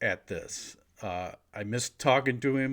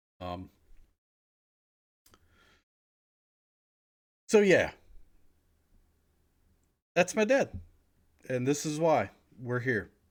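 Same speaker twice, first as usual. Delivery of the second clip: fighting back tears, voice near crying. Speaker telling viewers about their dad and why they're here, holding back tears. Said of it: "hold back tears".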